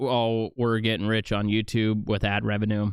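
ordinary talk

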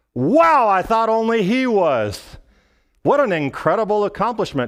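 dry, heavy sarcasm, mock impressed. Speaker acting out what they would say to someone claiming to be saved, retold sarcastic remark. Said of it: "That is sarcasm".

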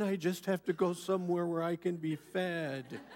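mock-sanctimonious tone. Mocking someone who complains to Sharon about being fed, in a mock-pious tone. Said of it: "They always say it in such a pious tone".

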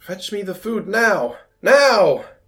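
very high, very loud, shrill, drawn-out scream. Voicing Glarv demanding food from the guards: Glarv screaming. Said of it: "He starts screaming at them".

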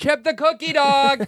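very high voice calling out across a distance. Pretending to call a dog in the park to come: calling a dog in the park. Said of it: "like he's in the park and I want him to come".

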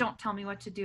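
ordinary talk, nothing marked

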